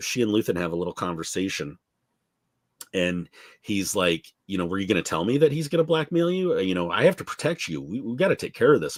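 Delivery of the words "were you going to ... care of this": offhand, unbothered, very nonchalant casual tone. Recapping an episode, retelling what Luthen says to her, mock-nonchalant Luthen. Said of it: "he says in a very nonchalant way".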